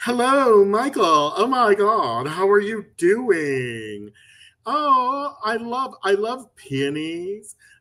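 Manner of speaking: very slow, high-pitched drawling voice.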